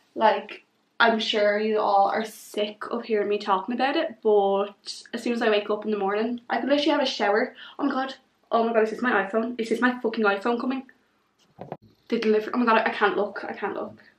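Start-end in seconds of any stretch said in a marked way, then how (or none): 7.8-13.9 fast, jittery, nervous, thrilled excited gushing babble. Seeing a phone delivery arrive, can't look: nervous and excited. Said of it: "I'm too nervous".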